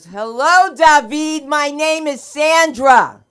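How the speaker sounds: booming, drawn-out, shrill, very loud slow speech. Retelling how the mother greets a boy, imitating talking loudly to the deaf. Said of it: "I never said he was deaf".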